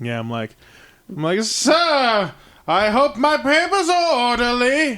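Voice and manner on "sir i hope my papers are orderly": fake British accent, slow, high, "sir" stretched. Telling how they speak to a police officer, put-on British accent. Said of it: "get a British accent".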